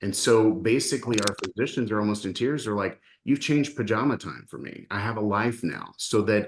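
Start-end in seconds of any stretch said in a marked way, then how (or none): none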